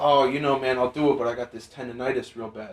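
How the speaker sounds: hushed, really quiet, soft, downplayed delivery. Retelling a man's excuse before an arm wrestle: imitating someone speaking quietly. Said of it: "like, real quiet".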